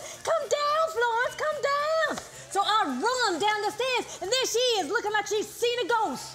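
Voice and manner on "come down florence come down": high-pitched, slow calling out. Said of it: "she starts calling".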